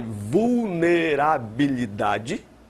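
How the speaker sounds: vulnerabilidade said slowly, deliberately, as an isolated word. Listing threat, vulnerability and attack from last class: slow, careful vulnerabilidade. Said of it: "eu vou falar bem devagar essa palavra".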